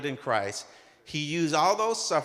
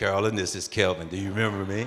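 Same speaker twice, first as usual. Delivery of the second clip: very deep, low, laid-on seductive lover's voice; 7 semitones lower than usual.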